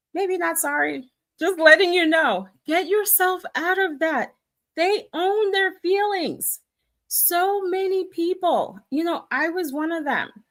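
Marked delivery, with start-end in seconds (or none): 2.6-8.7 loud, urgent, insistent screaming. Urging listeners to stop assuming they are unwanted: screaming. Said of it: "sorry if I sound like I'm, I'm screaming".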